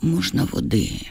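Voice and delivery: hushed, quiet, slightly lisping voice. A man in an office asks for water in a hushed, almost lisping voice. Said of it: "питає стишеним, майже шепелявим голосом".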